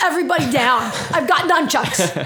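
commanding, authoritative villain voice. Imagining an attacker entering a mall: acting a nunchuck-armed attacker. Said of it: "imagine a guy going into some, like, mall going".

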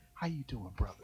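very quiet, hushed half-whisper, barely there. Retelling how folks greet someone they think backslid: imitating someone half-whispering. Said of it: "they start whispering to you, like".

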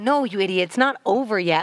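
plain

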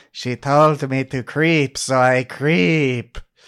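creepy zombie voice. Describing a show's creepiest zombie crawling on the ground, doing a Yetch impression. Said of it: "That was a pretty good impression".

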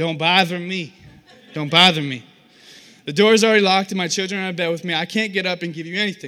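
very loud, sassy, put-out woman's voice. Reading a parable aloud, the speaker voices the one inside like a lady with an attitude. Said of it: "I always read this like a lady with an attitude".

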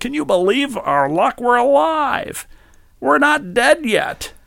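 very high pitch, swinging wildly up and down. Quoting how someone talks every day: bad Jeff Bridges impression. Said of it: "the voice you're using for the impression is so bad".

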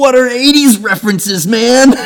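shrill, very loud, high-pitched bellowing shout. Telling everybody about a birthday guy, the speaker retells shouting at him: retelling a shout. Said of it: "And I just shouted".

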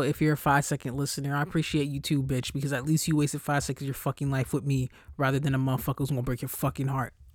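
aggressive, harsh, switched-up voice. Podcast host thanking listeners, sounding aggressive. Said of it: "I sound so aggressive".

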